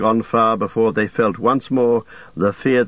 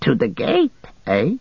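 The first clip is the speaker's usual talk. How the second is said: frightened, surprised, high-pitched creature squeak; 5 semitones higher than usual. Gollum is told to bring them to the gate: frightened Gollum squeak. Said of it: "Gollum squeaked, seeming surprised and frightened".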